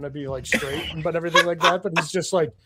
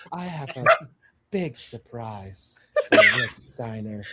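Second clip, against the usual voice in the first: low, sultry, swooping put-on seductive eighties-film voice; 5 semitones lower than usual. Asked to imitate her in her eighties porno voice: eighties porno voice impression. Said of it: "imitate her in her eighties porno voice? Just say that line".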